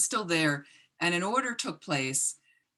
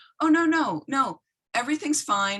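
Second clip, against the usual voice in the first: flustered, higher-pitched stammering, stumbling over words; 7 semitones higher, 4 dB louder than usual. Retelling the clerk's caught reply: imitating a flustered stuttering clerk. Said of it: "started kind of stuttering herself and said".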